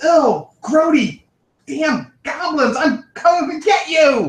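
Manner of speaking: furious, loud bellow, pitched way up. A narrator voicing a dragon shouting from above at goblins, loud, angry feminine voice. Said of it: "loud, angry, feminine voice from above shout".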